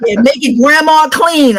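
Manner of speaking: hollering. Retelling yelling at the little ones on a pirate ship: imitating own past yelling. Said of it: "I'm yelling at them".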